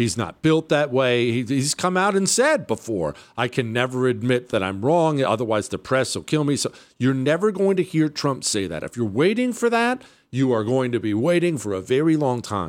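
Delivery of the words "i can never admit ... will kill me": ordinary talk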